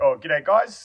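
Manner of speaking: New Zealand accent on g'day. A New Zealander showing how people expect them to talk, in a New Zealand accent. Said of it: "Is it weird that I'm impressed with that accent?".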